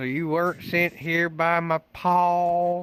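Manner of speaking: put-on worst heavy Southern accent imaginable, name drawn out. Retelling what a woman told the group, in the worst heavy accent imaginable. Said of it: "I hate myself for this fucking accent".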